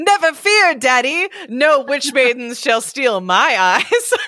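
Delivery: speaking through laughter. Reading a story aloud, Johnny answers the old man, laughing while speaking. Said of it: "Johnny laughed".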